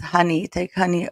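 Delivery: ordinary delivery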